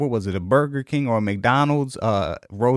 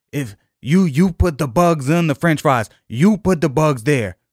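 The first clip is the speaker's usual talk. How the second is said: put-on irate yelling, louder; 3 semitones higher, 4 dB louder than usual. Retelling how the irate manager started yelling: imitating the manager yelling. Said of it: "He started yelling".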